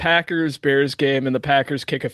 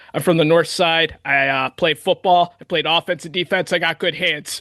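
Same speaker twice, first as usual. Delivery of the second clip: put-on heavy, thick, laid-on Chicago accent. Retelling a fan's interview after a catch: strong Chicago accent. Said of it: "with the most Chicago accent".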